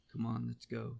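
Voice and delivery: gentle, quiet put-on voice. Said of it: "you know how he talks".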